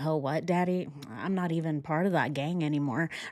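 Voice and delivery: confused-sounding voice. Retelling a witness's silent reaction to her father: imitating Nicole Kessinger confused. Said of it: "She's all confused".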